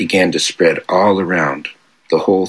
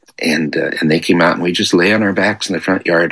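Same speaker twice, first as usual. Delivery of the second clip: ordinary delivery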